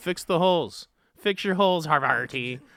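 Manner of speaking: swashbuckling pirate voice. Joking about holes in the cheese: pirate voice. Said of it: "I just love saying things like a pirate".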